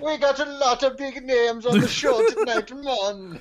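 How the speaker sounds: fake Jamaican accent, very high-pitched. Playing accent roulette, the speaker lands on Jamaican: put-on Jamaican accent. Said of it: "the death category of Jamaican".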